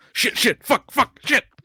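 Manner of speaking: panicked, frantic, very high-pitched swearing burst. Playing a character cursing at broken code: frantic cursing in character. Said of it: "Just more expletives from Hyena".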